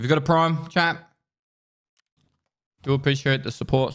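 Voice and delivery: speaking through a mouthful. Streamer thanking chat for subscriptions, talking with mouth full. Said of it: "I'm talking my mouthful".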